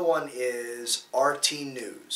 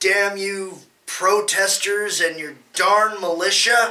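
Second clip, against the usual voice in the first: belted out high and slow; 7 semitones higher, 10 dB louder than usual. Mock how a man sounds by playing the creeper unmasked at an episode's end, in a Scooby-Doo villain voice. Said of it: "does he kind of sound like a Scooby Doo villain".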